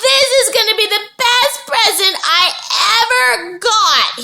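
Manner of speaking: thrilled, very high-pitched excited yell. Reading a story aloud, a boy at the circus: excited yell. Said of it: "he yelled".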